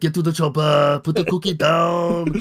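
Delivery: put-on deep, thick Austrian accent, low, stretched out, falling. Asked for a celebrity impression on the spot, answering with an Arnold Schwarzenegger impression. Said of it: "Can we get Arnold?".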